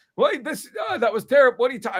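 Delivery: put-on cranky old man voice. Retelling a Thanksgiving dinner memory, imitating a grandfather arguing. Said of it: "my grandfather's sitting on the couch, like".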